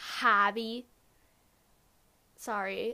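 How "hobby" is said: put-on the word hobby said with a Minnesotan accent. Pointing out their own slip while talking about hobbies: Minnesotan accent on hobby. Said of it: "Did you hear that Minnesotan accent? I was literally like".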